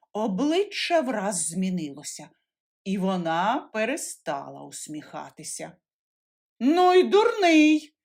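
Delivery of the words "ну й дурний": cross, angry scolding tone, raised and high. The aunt answers the boy who asked to give the cat some, angry. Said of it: "каже вже сердито".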